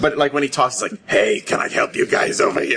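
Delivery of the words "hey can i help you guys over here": put-on congested sick rasp, rough, creaky, stuffed-up. Act out a sick man coming up all stopped up to talk, imitating a sick Fallout ghoul voice. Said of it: "you sound like a bad smoking ad".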